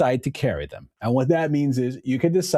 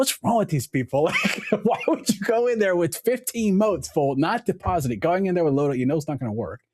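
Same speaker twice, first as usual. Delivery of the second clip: mock exasperated, high, ticked-off rant; 5 semitones higher than usual. Retelling how he vented to his wife about teammates, acting out being ticked off. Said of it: "And then and I get ticked off".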